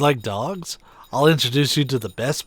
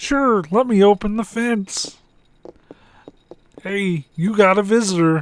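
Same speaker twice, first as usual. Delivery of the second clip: high, dopey, dim-witted put-on voice; 7 semitones higher, 3 dB louder than usual. Voicing a character who agrees to open the fence for a boy: dumb voice. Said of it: "give him the most dumb voice".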